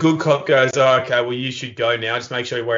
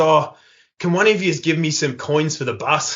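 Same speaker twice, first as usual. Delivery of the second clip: put-on broad Australian accent, higher; 3 semitones higher than usual. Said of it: "he's, like, really Australian".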